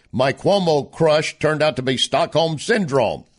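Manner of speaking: ordinary talk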